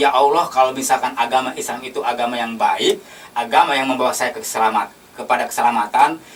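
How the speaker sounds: plain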